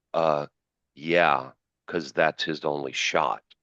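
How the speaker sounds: slow, disdainful, dismissive drawl, stating-the-obvious tone. Retelling another announcer's reply on a golf shot: imitating an announcer's disdain. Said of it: "the disdain from the other announcer".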